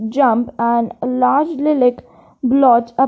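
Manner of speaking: plain reading voice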